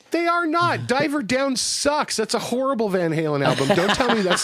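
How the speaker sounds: shrill, riled-up, heated, very high-pitched yelling. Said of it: "Stop yelling, [name]".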